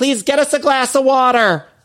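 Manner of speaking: very high, shrill shouting. Imagining a woman's insides crying out to her, acting out a shout. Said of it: "her insides just shouting".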